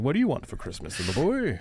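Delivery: slight Irish brogue, high, swooping and lilting. Describing how he sounds, the speaker imitates him: Santa voice with Irish brogue. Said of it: "a little brogue in there".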